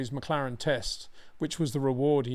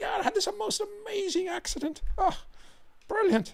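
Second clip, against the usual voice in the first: put-on Irish accent with very high intonation. Retelling a driver's account of a crash: imitating Derek's Irish accent. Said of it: "the intonation of his accent".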